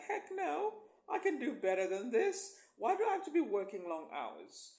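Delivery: high, loud, fed-up outburst. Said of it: "my voice went up right there".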